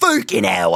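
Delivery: mock big tough man, English accent. Mocking how tough English men cuss: mock tough English man. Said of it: "When a big tough man is like".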